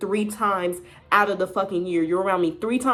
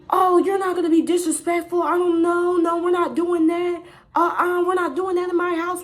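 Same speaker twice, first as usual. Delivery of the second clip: acted, very high-pitched, shrill, scolding scream; 10 semitones higher than usual. Retelling how an aunt came out of the kitchen: imitating aunt screaming.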